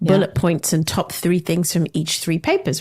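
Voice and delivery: ordinary talk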